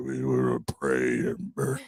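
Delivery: very low-pitched, raspy, rough voice. Showing how T. D. Jakes preaches in a low raspy voice. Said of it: "very low, raspy".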